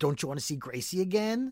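put-on taunting tone. Recapping a scene where a man taunts Aaron with a gun, retelling a taunt. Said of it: "the guy taunts him and says".

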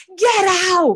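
high, loud, furious, angry yell. Naming a favorite part of a nineties drama: imitating a yelled line. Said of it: "someone yelling".

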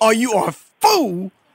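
derisive laughing. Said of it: "he'd start laughing in my face and probably just slap me and go".

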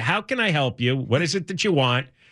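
plain

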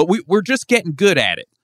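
put-on high, loud, swooping Southern accent. Retelling a comedian's joke about texting bans: Rory Scovel Southern accent. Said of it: "He just did it in a Southern accent the whole time".

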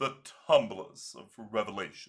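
haughty-sounding British accent. Reading card flavor text aloud when asked: pompous British Nicol Bolas voice. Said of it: "words to be read here by your favorite Nicol Bolas, the pompous British man".

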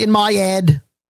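put-on British-sounding accent. Imitating how he says a phrase, in an imitated British accent. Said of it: "I'm even a fan of his British accent when he goes".

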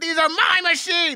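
put-on, very high, reined-in controlled yell. You're quoting a line he reads so well, imitating a yell. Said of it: "he's yelling".

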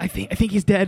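hushed whisper. Retelling how the group reacted to the sprayed spider while a kid slept nearby: whispering. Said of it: "Why are we whispering?".

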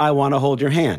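ordinary talk

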